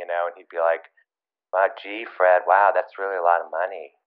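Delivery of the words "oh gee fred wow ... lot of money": quiet, hushed, soft-spoken murmur. Recounting what he would say to whoever ran the factory, imitating a quiet voice. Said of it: "a very kind of quiet sort of voice".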